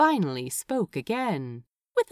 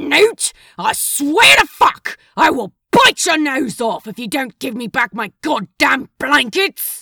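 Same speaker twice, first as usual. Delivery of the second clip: very loud, shrill, feral growling snarl; 6 semitones higher, 11 dB louder than usual. A narrator reads a man's outburst at his roommate, snarling. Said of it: "He snarled".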